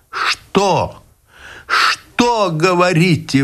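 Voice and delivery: very high, pained, painful outcry. The first-person narrator cries out a question to the man, crying out painfully. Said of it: "выкрикнул я болезненно".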